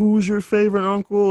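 high TV commercial voice. Retelling a weird TV commercial: Uncle Magic impression. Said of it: "he'd be like".

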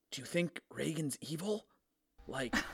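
quiet whispering. Whispering in character to another party member: whispering in character. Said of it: "So I whisper to Malachi".

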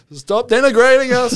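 put-on Lebanese accent. Retelling what protest organisers said, imitating an accent. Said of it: "In that accent?".

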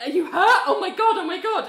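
high, loud, fretting panicked voice.

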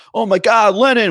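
put-on thick New York accent, loud and pitched very high. Retelling a film scene of a fan in Central Park, in a thick New York accent. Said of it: "with his thick New York accent".

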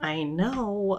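muttering under breath. Retelling a personal trainer offering technique tips, the speaker replies under breath. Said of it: "under my breath".

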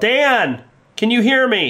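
very high-pitched, shrill shout. Playing a character who calls for dan down an alley: yelling in character. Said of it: "I turn and I yell".

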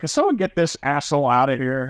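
ordinary talk

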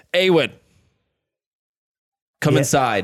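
calling out. Game master voicing the player character's father, yelling. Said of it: "your father just yells".

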